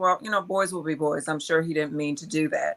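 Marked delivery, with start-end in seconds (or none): none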